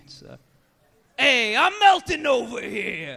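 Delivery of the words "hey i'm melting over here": very high, loud, swooping New York accent drawl. Speaking to the audience, doing an impression of a New York steel beam. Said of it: "it's my impression of a New York steel beam".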